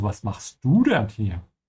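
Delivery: du carries the emphasis. Repeating how she said the german question, stress on du. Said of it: "she puts the emphasis on du".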